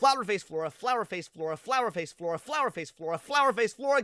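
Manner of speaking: rattled off rapidly and nonstop. Speaker retries a tongue twister one more time, saying it fast. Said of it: "Say that five times fast".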